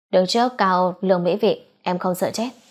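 ordinary delivery

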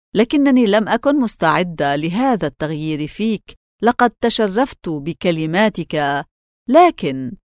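usual speaking voice

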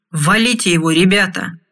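plain reading voice

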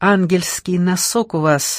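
plain

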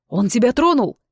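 ordinary delivery

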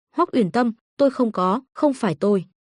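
plain

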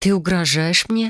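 plain

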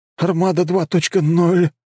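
trembling, very high-pitched voice. A student answers which artifact went missing: trembling voice. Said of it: "дрожащим голосом ответил ученик".

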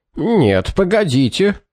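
high-pitched, objecting, protesting tone. Clitridge objects before Shaw cuts him off: protesting tone. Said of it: "протестующим тоном произнес Клитридж".

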